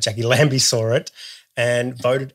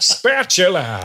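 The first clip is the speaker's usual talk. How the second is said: put-on tv voiceover announcer voice, higher; 5 semitones higher than usual. Retelling a sketch where normal words sound rude: SBS voiceover guy voice. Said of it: "when said by the S B S voiceover guy".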